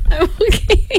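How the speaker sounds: laughing through words, very high-pitched. A co-host, asked if they are okay, answers while giggling. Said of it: "Looks like the giggles have reared their cute faces".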